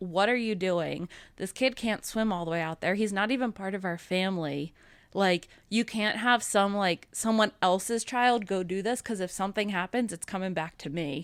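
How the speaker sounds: usual speaking voice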